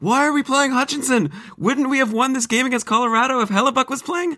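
very high-pitched voice. Quoting what everyone on Twitter says about the goalies: imitating people on Twitter. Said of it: "That's my impression of people on Twitter".

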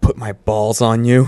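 voice trembling and quivering with longing. Narrator voices his character hesitantly asking the Bigfoot a question, voice trembling with desire. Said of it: "my voice trembling with desire".

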